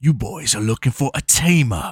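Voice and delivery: put-on speaking in a Cockney accent. Saying how you kept expecting Carl Urban to talk in this movie, do Butcher from The Boys, Cockney accent. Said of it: "expecting him to talk in a Cockney accent".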